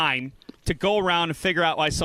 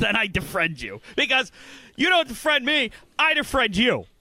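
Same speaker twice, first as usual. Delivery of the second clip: agitated, heated, worked-up voice, pitched high; 6 semitones higher than usual. Explaining the third option to the listener, a little worked up. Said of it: "I'm a little worked up".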